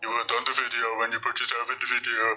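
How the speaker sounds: mocking, scornful, belittling delivery in low voice. Reacting to a video and mocking the person filming: mocking imitation of his voice. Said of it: "Must be the voice".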